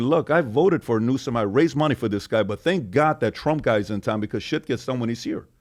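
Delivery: ordinary talk, nothing marked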